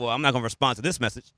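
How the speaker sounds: ordinary talk, nothing marked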